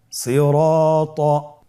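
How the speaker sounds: slow, drawn-out, stretched full word.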